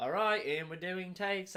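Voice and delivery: put-on English accent. Describing how American directors shoot with one or two cameras, in an English accent. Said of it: "I don't know why I'm speaking in an English accent".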